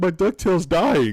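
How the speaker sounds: put-on crying. Speaker retells what they told their dad as a crying kid, retelling crying. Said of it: "why are you crying?".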